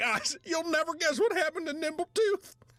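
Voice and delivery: high, eager character voice. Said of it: "Comes back into the room".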